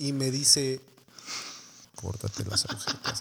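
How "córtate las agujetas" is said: very low, hushed, under-the-breath voice. Retelling what someone holding a knife said: imitating a very low voice. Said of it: "con voz bien baja".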